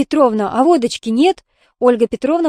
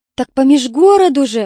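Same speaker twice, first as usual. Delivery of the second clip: gasping exclamation, higher in pitch and louder; 2 semitones higher, 3 dB louder than usual. Narrator reads Aunt Raya reacting to Olga Petrovna, with a gasp. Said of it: "ахнула тетя Рая".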